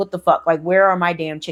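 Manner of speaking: put-on angry outburst, old man voice. Retelling the old man finding his chickens' eggs stolen: imitating an angry old man. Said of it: "he's pissed".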